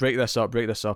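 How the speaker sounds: plain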